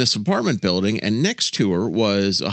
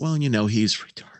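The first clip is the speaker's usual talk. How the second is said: plain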